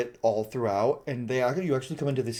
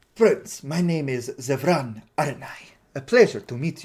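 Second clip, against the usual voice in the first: said with a smile in the voice; 4 dB louder than usual. Voicing the elf introducing himself to the party: smiling Zevran voice. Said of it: "He goes".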